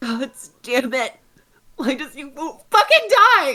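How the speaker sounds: very high, loud, furious sobbing cry. A character whose anger turns to crying as an eye will not die: angry crying. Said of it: "more of like an angry cry".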